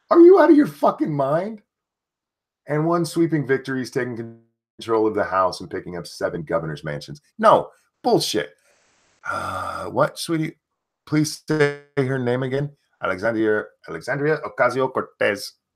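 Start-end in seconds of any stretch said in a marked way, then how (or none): 13.0-15.5 put-on light Mexican accent. Saying a name again when asked: little Mexican accent. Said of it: "my little Mexican accent on it".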